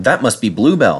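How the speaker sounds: usual speaking voice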